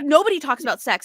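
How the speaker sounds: normal talking voice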